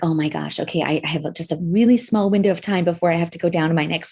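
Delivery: ordinary delivery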